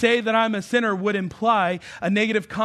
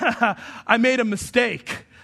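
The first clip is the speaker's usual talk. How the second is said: put-on laughing while talking. Retelling a reply after eating a cookie before dinner: imitating laughing while talking. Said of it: "as he's laughing, he goes".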